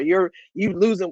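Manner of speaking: usual speaking voice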